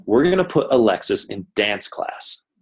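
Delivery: ordinary delivery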